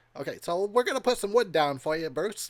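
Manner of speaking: easygoing, relaxed, reassuring tone. Acting out a behind-the-scenes talk between two filmmakers: impression of Bruce Campbell. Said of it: "my best impression of those two".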